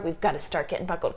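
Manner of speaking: ordinary talk, nothing marked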